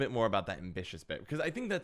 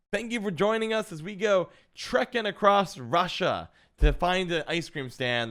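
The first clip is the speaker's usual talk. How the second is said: loud, high-pitched, crazy yelling; 7 semitones higher, 6 dB louder than usual. A streamer describes the intro he gives on stream, retelling his own yelled intro. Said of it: "and then I just yell".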